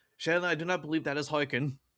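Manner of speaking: loud, projected voice calling out. A tabletop player voices his character calling after a companion riding off, shouting out. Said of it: "he's going to shout out".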